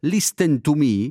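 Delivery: put-on slow English with a young Neapolitan accent.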